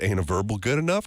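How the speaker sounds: usual speaking voice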